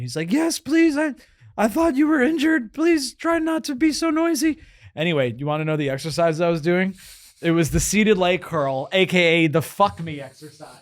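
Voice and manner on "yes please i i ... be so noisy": put-on nervous teenager voice, pitched very high. Retelling what a gym teenager said: nervous teenager from The Simpsons voice. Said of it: "the teenager from, like, The Simpsons who's, like, really nervous".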